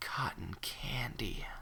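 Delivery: barely audible, raspy, close whispered words. A narrator reading a story voices Fluttershy whispering in someone's ear: raspy Fluttershy whisper. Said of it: "my voice was really raspy there".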